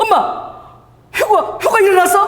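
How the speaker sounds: put-on bewildered, startled, high-pitched girl voice.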